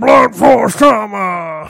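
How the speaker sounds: very loud commentator bellow. Asked to say something, the speaker does a fake Josh Matthews voice. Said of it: "I have to be really much louder".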